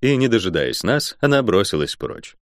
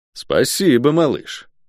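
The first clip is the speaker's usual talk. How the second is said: venomous, spiteful, poison-dripping delivery; 3 semitones higher than usual. The narrator replying to a kid after a magic mishap: venomous. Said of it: "ядовито сказал я".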